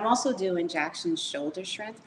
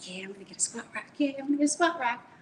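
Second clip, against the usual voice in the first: fast, giggly, rattled-off words, giggling throughout; 4 semitones higher than usual. Retelling being called downstairs by three people, retelling own giggling. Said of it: "I'm like giggling".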